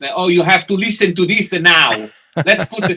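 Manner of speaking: put-on Italian accent. Retelling a friend's words in a record store: imitating a friend in an Italian accent. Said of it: "I'm gonna say it with Italian accent".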